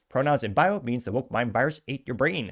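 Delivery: ordinary talk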